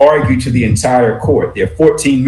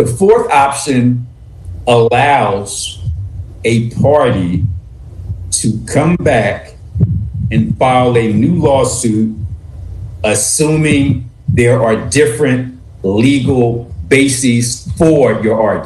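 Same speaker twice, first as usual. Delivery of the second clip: very slow, careful, measured delivery, word by word. Speaking to Amadi without breaching confidentiality, talking very slowly. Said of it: "I'm going to talk very slowly".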